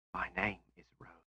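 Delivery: whispered, breathy. Rose introduces herself by name, in a breathy whisper. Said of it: "she whispered in her breathy voice".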